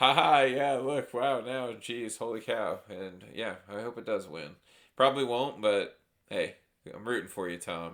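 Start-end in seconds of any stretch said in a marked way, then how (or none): 0.0-2.8 mock loud, high talk through laughter. Retelling the reaction when the movie got nominated: imitating past laughing while talking. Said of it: "we're over here laughing like".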